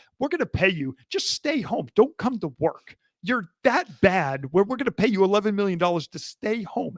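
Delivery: ordinary delivery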